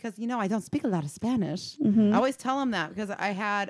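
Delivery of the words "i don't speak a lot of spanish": put-on Spanish accent. Retelling what she always tells her patients at work, in a put-on Spanish accent. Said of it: "I love this accent you're doing".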